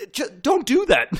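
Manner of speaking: acted-out freak-out. Describing a post-credit scene, the speaker quotes a character, acting out a freak-out. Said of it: "he has this whole freak out".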